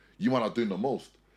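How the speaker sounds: ordinary talk, nothing marked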